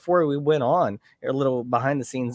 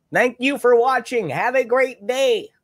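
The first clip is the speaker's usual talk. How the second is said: mock yell in a very high, loud voice; 10 semitones higher, 4 dB louder than usual. Doing a deaf character from a show who yells everything: yelled Twin Peaks character voice. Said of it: "he's yelling it. ... I just like doing the voice".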